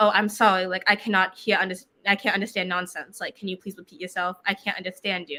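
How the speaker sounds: ordinary talk, nothing marked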